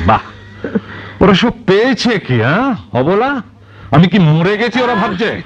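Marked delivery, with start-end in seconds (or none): 1.2-5.3 high, furious, indignant yelling. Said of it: "আর চেঁচিও না বাবু".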